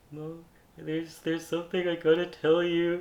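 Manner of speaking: nervous shaky mumble. Retelling coming out to mom on the couch: imitating nervous shaky mumbling. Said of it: "shaking and, like, mumbling".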